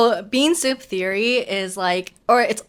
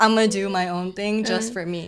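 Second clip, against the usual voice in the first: ordinary talk, nothing marked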